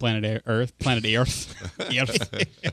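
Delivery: slow put-on Scottish accent, words drawn out. Joking on a show after a Star Trek reference, slipping into a Scottish accent. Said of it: "went Scottish there for a minute".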